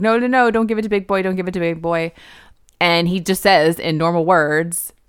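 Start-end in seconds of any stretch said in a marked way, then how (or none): 0.0-2.1 mock, tearful blubbering through sobs. Retelling what he said once he started crying, imitating someone crying. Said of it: "then he's crying".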